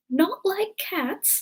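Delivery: piercing, impassioned, very high shrill outburst. Narrator reads the mouse answering Alice: shrill, passionate voice. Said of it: "said the mouse in a shrill, passionate voice".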